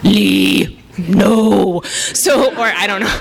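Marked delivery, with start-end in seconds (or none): 0.0-1.8 rough, creaky zombie voice, not drawn out. Describing dreams of zombies tapping at the window: zombie voice. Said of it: "That's my zombie voice".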